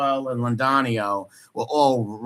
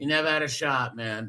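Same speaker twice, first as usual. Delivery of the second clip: normal talking voice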